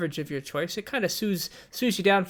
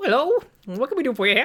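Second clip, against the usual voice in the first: put-on high, loud little old lady gnome voice; 9 semitones higher, 6 dB louder than usual. The narrator voices a little old lady gnome greeting you as you enter; little old lady gnome voice. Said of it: "a little old lady gnome who looks up as you enter and says".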